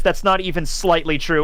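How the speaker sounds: ordinary talk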